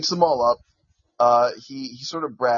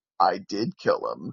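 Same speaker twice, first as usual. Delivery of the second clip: put-on smug villain voice, lower pitch; 5 semitones lower, 4 dB quieter than usual. Retelling a cartoon scene, quoting the villain: imitating smug Lex Luthor. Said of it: "still being a smug little shit goes".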